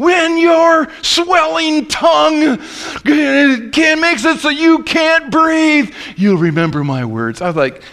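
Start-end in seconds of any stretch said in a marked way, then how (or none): 0.0-6.4 mock furious ranting yell, very high-pitched. Quoting a man who yelled at the congregation after someone laughed: retelling a furious yell. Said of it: "went ballistic, man. Went red-faced, and he's yelling".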